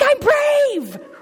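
put-on very high, loud little-kid holler. Retelling trick-or-treating with a child, imitating Ellie yelling. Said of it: "she yells out".

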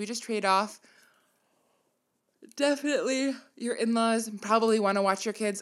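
speech spoken mid-yawn. Advising parents on getting others to watch their kids, yawning while talking. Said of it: "I keep yawning".

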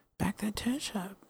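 quiet whisper. Saying the show's usual sign-off line: quiet whisper. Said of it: "it's gonna be a real quiet whisper".

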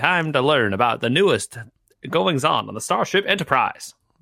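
put-on old-time transatlantic radio announcer accent. Podcast hosts joke about their style; put on a transatlantic radio accent. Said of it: "We get our transatlantic on".

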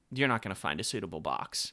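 put-on rudeness. Speaker retells what staff said as the speaker walked out, mock-rude. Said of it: "they very rudely said to me".

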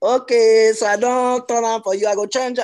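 very loud, high, exaggerated Nigerian accent. Retelling what they said to a woman who kept saying 'yes, ma', exaggerated nigerian accent. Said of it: "I exaggerated my voice a bit".

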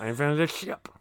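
voice for a pet cat. Voicing a cat as a tech billionaire: imagined voice of the cat Nugget. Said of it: "That's what I imagine he sounds like".

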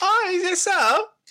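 put-on New Zealand accent, very high, very drawn-out. Joking about copying a friend's accent: put-on new zealand accent. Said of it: "You do a really good New Zealand accent".

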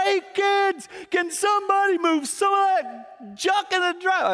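mock very high, loud, fed-up, irritated yell. Retelling rolling the car window down at the kids, retelling a yell. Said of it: "And I just yelled".

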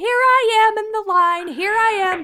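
very high, loud, practically shouted chatter. Retelling a woman in line FaceTiming her daughter, imitating her practically shouting. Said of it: "she's like practically shouting like".

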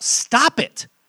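most forceful, intense, very loud delivery. Imitating how god responds to people hurting others: most intense voice possible. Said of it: "in the most intense voice possible".

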